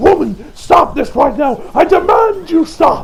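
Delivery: high, loud, insistent scream.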